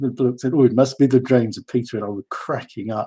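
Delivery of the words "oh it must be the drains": imitated Indian accent. Telling a story about Peter, quoting another man in a put-on Indian accent. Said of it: "so I can do the accent".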